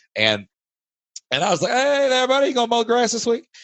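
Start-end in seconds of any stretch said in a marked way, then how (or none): 1.8-3.5 put-on full country Kentucky accent, strong and pitched high. Retelling asking the lawnmower guy a question during a call; Kentucky accent. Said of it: "I started talking like I normally talk".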